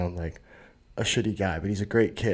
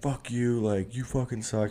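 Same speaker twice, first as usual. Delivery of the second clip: put-on angry berating, hurled insults; 3 semitones higher than usual. Retelling what a crowd screamed at a man, imitating angry berating. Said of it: "just like berating him".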